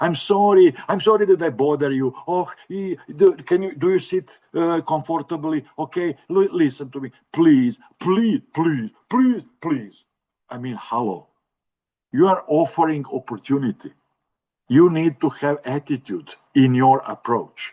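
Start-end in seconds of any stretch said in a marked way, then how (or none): 0.0-10.0 mock over-apologetic begging, acted pleading. Showing the wrong way to ask someone for something, demonstrating apologetic pleading. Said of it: "Not excuse me".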